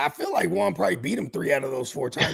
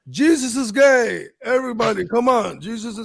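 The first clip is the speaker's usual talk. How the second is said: crazy put-on Eastern European accent, louder; 6 semitones higher, 6 dB louder than usual. Retelling what a UFC fighter from Ukraine said, in a crazy Eastern European accent. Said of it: "you had like this crazy Eastern European accent".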